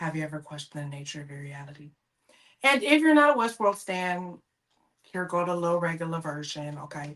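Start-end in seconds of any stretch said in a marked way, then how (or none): 0.0-1.9 earnest, best screen-actor voice. Opening the episode with a line in a Jeffrey Wright voice. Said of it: "in my best Jeffrey Wright voice".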